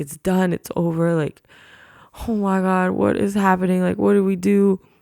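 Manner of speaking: high, tearful, frantic panicked crying. Retelling a police stop beside a woman reading her Bible, retelling panicked crying. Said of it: "And I'm crying".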